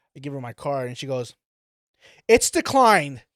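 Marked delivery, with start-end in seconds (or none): 2.3-3.1 very loud, high, carrying call. Retelling a cashier announcing a declined card: imitating someone saying it loudly. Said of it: "So loud".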